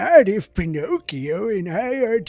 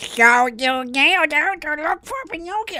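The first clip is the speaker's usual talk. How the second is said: failed put-on cartoon duck voice; 9 semitones higher than usual. Trying a Donald Duck impression for a game line, then giving up: Donald Duck impression. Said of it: "how do I do a, a Donald Duck impression?".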